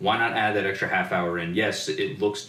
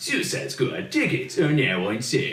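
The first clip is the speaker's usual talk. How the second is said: put-on movie-ad announcer voice, much higher; 5 semitones higher than usual. Speaker imitates the voice the other person used reading movie ad copy, announcer voice. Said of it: "you kind of did the voice where you're like".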